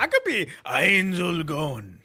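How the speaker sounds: put-on Russian accent, loud and very slow. Saying a character's name, Russian-sounding accent. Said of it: "why'd you say it like you were a fucking Russian".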